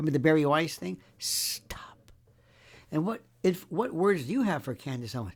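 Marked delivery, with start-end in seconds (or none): 1.2-2.1 put-on mean voice, quieter. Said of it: "That's my mean voice".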